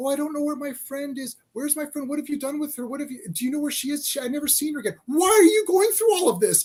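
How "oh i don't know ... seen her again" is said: put-on fake crying voice with sobs. Retelling a film scene where Catwoman pretends and fakes crying: imitating Catwoman fake crying. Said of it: "She's pretending and fake crying".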